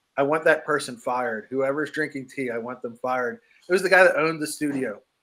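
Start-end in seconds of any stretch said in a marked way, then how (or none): none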